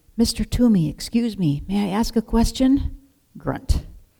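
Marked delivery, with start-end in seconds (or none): 0.2-3.0 voiced stage whisper, careful and polite. After a long time, Thomas asks the woodcarver, Mr. Toomey, a question: half-whispering. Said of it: "Thomas whispered".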